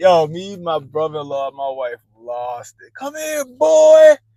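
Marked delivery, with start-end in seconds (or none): 2.9-4.1 very high, shrill, very loud holler. Retelling a son calling after a kid: imitating son sounding like a slave catcher. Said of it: "that shit sounded like he was a goddamn slave catcher".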